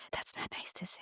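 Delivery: very quiet, breathy whisper. Retelling a mother's reply to her daughter at dinner, imitating a whisper. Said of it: "she whispered into her, her daughter's ear".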